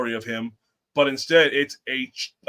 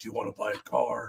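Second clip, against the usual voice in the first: put-on horror villain voice; 3 semitones lower, 10 dB quieter than usual. Pitching a car sale to a customer, in the Saw guy voice. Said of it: "selling the Saw guy".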